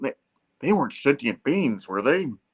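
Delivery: earnest robot voice full of noble concern. Retelling a comic scene, Peter asking a question: concerned, like Optimus Prime. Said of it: "concerned, like Optimus Prime".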